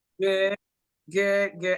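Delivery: put-on southern US accent. Answering a friendly morning greeting: southern accent. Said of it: "I just gave you a gave a southern accent right then".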